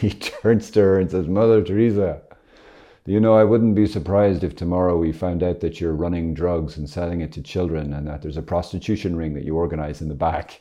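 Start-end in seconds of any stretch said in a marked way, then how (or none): none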